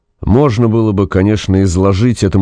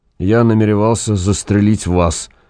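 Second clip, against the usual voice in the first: ordinary delivery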